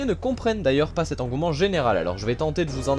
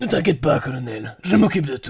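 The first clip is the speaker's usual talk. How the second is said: raspy, hoarse voice, lower pitch; 4 semitones lower, 4 dB louder than usual. Answering the colonel who asks if he can count on him, raspy voice. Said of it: "tu fais la voix rauque?".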